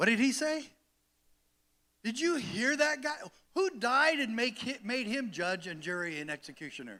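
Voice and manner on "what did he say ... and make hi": feigned, indignant sarcasm, pitched up. Reacting to a clip of a deputy: put-on sarcastic tone. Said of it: "I was being very sarcastic just then".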